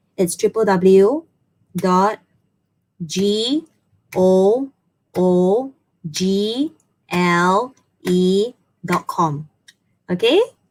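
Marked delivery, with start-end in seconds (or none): 0.2-9.5 very slow, spelled out letter by letter. Giving viewers a website address to write down: said slowly. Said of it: "I'm gonna say it slowly".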